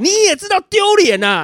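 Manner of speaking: shrill, very loud, high-pitched, very slow and drawn-out. A teacher retells answering a downstairs shopkeeper: very loud. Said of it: "我就很大声".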